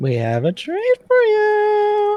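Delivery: creepy, very high hag voice, sing-song calling. At night, a voice calls to Scarlet from the woods: creepy voice calling from woods. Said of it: "the same sort of voice".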